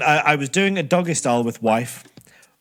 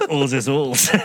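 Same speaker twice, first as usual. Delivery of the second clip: put-on Yorkshire accent and dialect. Asked to say one more line in a yorkshire accent. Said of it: "can you say one more thing for me in a Yorkshire accent".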